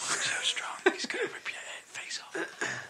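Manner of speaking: whispering. Retelling what people in the climbing hangar say: imitating people whispering. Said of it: "Everyone's whispering".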